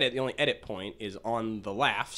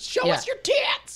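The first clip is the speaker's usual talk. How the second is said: put-on women's yelling, higher and louder; 5 dB louder than usual. Retelling how women in a stand-up crowd yelled: imitating women yelling. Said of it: "women are just yelling, like".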